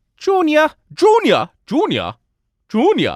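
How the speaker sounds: swooping, high-pitched calling out. Naming a microphone model, then playing on its name: Sean Connery impression. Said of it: "That's my Sean Connery impression".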